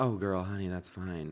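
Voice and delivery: mock dismissive, brushing-off tone. Retelling what a woman said after the speaker apologized, imitating her dismissive tone. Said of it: "the way she said it felt so dismissive".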